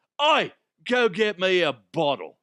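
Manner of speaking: put-on angry voice in an Australian accent. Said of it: "kind of like a just an angry Australian".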